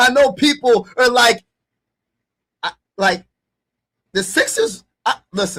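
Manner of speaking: excited stuttering, tripping over words. Ranking basketball players, defending a pick people will hate: excited stuttering. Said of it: "I'm stuttering because I'm like so excited".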